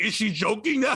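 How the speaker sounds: ordinary talk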